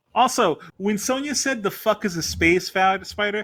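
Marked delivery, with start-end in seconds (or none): none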